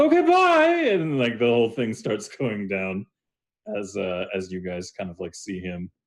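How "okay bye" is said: high, loud calling out. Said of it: "he goes".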